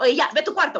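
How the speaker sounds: voice on the attack, attacking tone. Showing the opposite of caressing with the voice: imitating an attacking voice.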